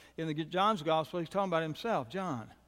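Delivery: ordinary delivery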